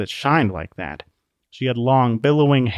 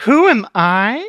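bright, happy, cheerful, very high, loud voice; 11 semitones higher, 6 dB louder than usual. Narrating a woman replying to Law's question: happy tone. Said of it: "The woman's tone seemed happy, as if she expected the question".

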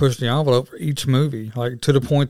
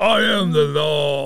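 very slow drawl spoken out of one side of the mouth; 3 semitones higher than usual. Talking about 90s action stars, quoting a line in crooked-mouth Stallone impression. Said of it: "you got to say it with the crooked mouth that Stallone has".

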